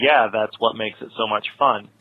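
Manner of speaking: normal talking voice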